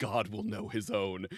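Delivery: acted, real serious, grave, solemn delivery. Retelling a party member's line before a boss fight: imitating a very serious tone. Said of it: "just gets real serious and just goes".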